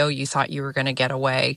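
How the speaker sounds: usual speaking voice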